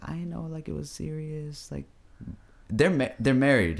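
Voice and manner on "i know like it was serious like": high-pitched, tearless put-on fake sobbing. Retelling a video statement where she was fake crying: imitating someone fake crying. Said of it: "fake crying. She's like".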